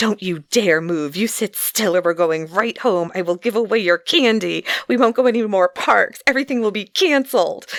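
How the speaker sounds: hissed, fast delivery. Retelling how she hissed at a squirming child, retelling a hissed threat. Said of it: "And he was like".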